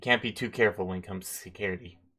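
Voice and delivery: flat, expressionless, level deadpan monotone. Voicing a lab worker who stares at the visitors: dead-eyed, flat delivery. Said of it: "dead-eyed and goes".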